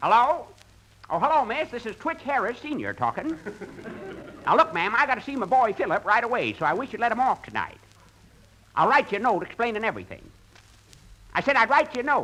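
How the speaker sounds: fake old rube voice. Pretending on the phone to be phil's father: put-on old rube voice. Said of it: "I'll talk like an old rube".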